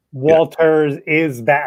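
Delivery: name drawn out, said very slowly.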